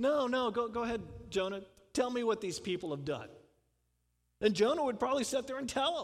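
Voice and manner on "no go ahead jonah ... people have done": indulgent, humoring, exasperated tone. Retelling God's reply to Jonah, imitating an eye-rolling God. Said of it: "God kind of rolling his eyes".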